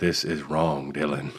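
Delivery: slow, deliberate delivery, every word drawn out. Acting out a famous actor walking in on the co-host: Morgan Freeman impression. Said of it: "Morgan Freeman walks in, he's like".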